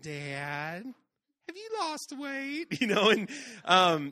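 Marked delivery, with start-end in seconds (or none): 0.0-2.8 small, sugary, sweet little voice, drawn-out and sing-song. Father retelling his son coming down to ask him, sweet little voice. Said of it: "in his sweet little voice".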